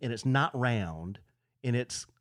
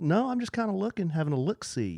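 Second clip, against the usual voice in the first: put-on country twang creeping in, drifting higher; 5 semitones higher than usual. Retelling chatting with an old timer in a boot store: imitating own drifting country twang. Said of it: "I noticed my voice kinda doing a".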